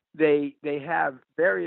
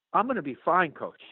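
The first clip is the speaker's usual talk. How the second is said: put-on dry, level, slightly offended tone; 4 semitones higher than usual. Coach retells a freshman's answer to whether he'd be all right, imitating a somewhat insulted reply. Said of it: "somewhat insulted almost".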